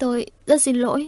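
wavering, unsteady, trembling, quivering voice. A woman takes a man's arm, looks up at him and speaks, trembling voice. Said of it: "giọng run run".

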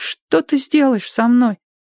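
quavering, very high-pitched trembling voice. Narrator reads a captive boy questioning his captor: trembling voice. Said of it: "дрожащим голосом спросил мальчик".

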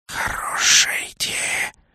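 sibilant, breathy, hissed whisper. Narrator voicing a character's reply to the storyteller: hissing. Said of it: "прошипел Наг".

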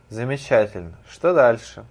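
usual speaking voice

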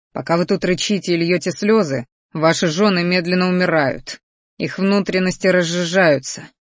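ordinary delivery

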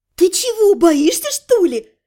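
merry, lively, cheerful sing-song voice. Narrator reads a woman asking the narrator, who keeps backing away, cheerfully asking. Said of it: "весело спросила она".

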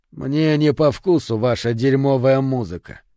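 ordinary delivery

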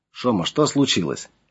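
ordinary delivery

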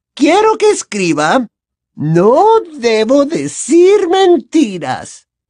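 syrupy sweet, honeyed drawl, very high pitched. Reading the teacher's words to Harry after she hands him a quill, Umbridge's honeyed voice. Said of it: "le indicó con voz melosa".

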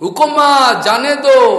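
high, loud, slow shout.

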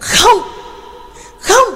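very high, shrill, piercing shriek. A struggling woman protests being introduced, shrieking scream. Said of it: "rít giọng hét lên".

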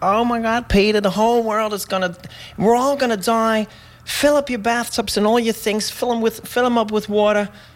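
put-on thick New York accent. Retelling what a woman said to peter, imitating a thick new york accent. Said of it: "met heel mooi New Yorks accent".

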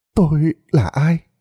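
husky, rasping voice. Narrator, who remembers nothing, finally speaks up in a hoarse voice. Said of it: "với chất giọng khàn khàn".

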